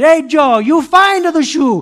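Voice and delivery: put-on booming, drawn-out Italian accent. Retelling his father calling to him in a shoe store: imitating dad's booming italian voice. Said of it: "his booming Italian voice".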